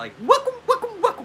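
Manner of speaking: quick, very high-pitched, laughing delivery. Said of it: "She does like that real quick".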